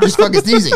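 mock angry tone. Retelling snapping at a friend who thought they were crying: imitating own angry retort. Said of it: "I was so pissed".

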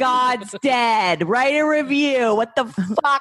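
acted-out, high-pitched shouting and yelling. A host signing off a christmas episode to listeners, yelling. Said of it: "You're yelling a lot".

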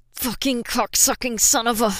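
growled through clenched teeth. Narrating Silver cursing as Flint holds him tight, growled through clenched teeth. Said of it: "Silver growled through clenched teeth".

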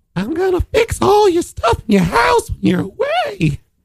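very high, swooping elf voice with gravel. In a group trying out the voice, doing a gravelly Family Guy Dobby voice. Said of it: "There's a little bit of gravel only when you do it".

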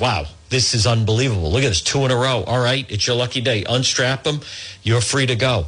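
ordinary delivery

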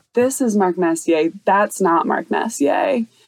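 normal talking voice

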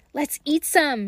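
eager, excited call. Narrator reading a brother's suggestion to his sister, excited. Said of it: "said Hansel excitedly".

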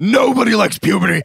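monster character voice. Describing a show's scene, quoting the Hormone Monster: Hormone Monster impression. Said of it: "That was a good impression".

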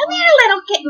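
very high, cackling witch voice. Performing a witch voice after being asked to show it: witch's cackle voice. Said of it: "I do the best witch's cackle".

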